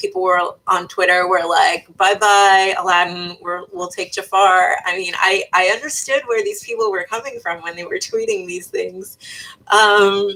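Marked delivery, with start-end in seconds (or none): none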